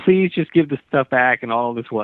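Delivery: imitated, put-on pleading tone. Retelling a stranger's words to Damien: imitating a pleading tone. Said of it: "that was the actual tone of it".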